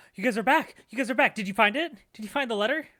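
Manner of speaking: flustered, frantic, high, rushed headless-chicken frenzy. Voicing a character who spots the players returning: frantic, like a headless chicken. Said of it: "kinda like a chicken with his head cut off".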